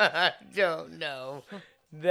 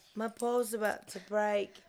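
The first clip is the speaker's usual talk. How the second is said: put-on British-accented dog voice, higher and quieter; 5 semitones higher, 5 dB quieter than usual. Voicing a dog who begs Mommy: British accent voicing a dog. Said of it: "pretty British boy".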